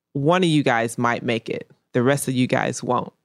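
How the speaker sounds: usual speaking voice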